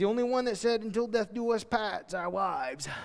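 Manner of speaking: put-on thick, broad down-east Maine accent. Quoting a pastor friend: Adam's thick Maine accent. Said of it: "with a thick Maine accent".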